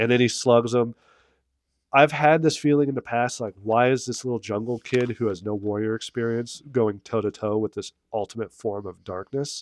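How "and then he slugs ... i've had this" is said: plain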